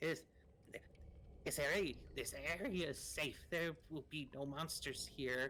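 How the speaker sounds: cool put-on mushroom-creature voice. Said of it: "he's got a cool voice".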